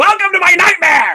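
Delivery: high, loud villain-style yell. Asked to do a villain's line and yell it: yelling Ivan Ooze impression. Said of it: "do an Ivan Ooze and, and, and yell".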